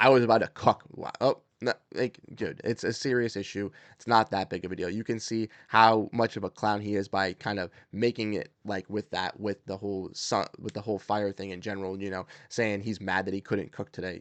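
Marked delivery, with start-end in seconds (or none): 0.0-0.8 loud, boastful, mocking bragging tone. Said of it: "bragging like".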